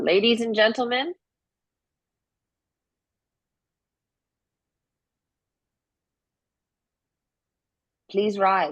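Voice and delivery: booming, really loud, high call. Voicing Scully calling the room to rise: really loud. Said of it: "kinda says it really loud".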